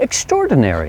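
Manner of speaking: extraordinary with tone climbing then dropping. Explaining intonation that is not monotone, rising-falling pitch on extraordinary. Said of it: "tone of voice has to rise and fall like".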